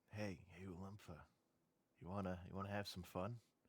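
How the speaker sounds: whispering. In a role-play, the character looks over to a companion at the threshold, whispering. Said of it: "I kind of whisper to her".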